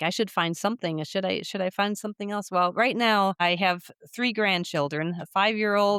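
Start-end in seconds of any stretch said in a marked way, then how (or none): none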